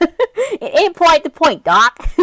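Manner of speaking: swooping, high cartoon rabbit voice, slow drawl, big swoops. Commenting on a cartoon scene, doing a Mel Blanc Bugs Bunny impression. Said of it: "doing a Mel Blanc impression".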